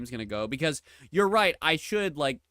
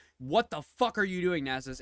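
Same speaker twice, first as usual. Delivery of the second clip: put-on scream, yelled higher-pitched; 4 semitones higher than usual. Retelling yelling at a Nasus player in a game: retelling own scream. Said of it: "I, like, screamed".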